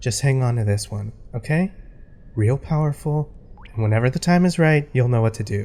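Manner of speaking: hushed whisper under the breath. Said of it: "Why are we whispering?".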